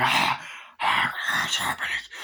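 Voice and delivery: creepy, hushed whisper.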